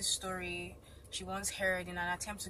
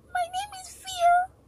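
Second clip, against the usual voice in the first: very high, very loud, tiny, shrill squeaky monster voice; 14 dB louder than usual. Narrator reads the tiny monster answering a man's question in a tiny, high-pitched squeak. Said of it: "In a tiny, high-pitched voice, the monster squeaked".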